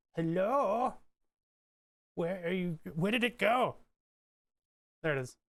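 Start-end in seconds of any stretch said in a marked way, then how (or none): 0.2-3.8 voice used for talking to pets. Streamer hunting for the program window on screen, in the voice used on a dog. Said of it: "I'm using the voices that I use on my dog".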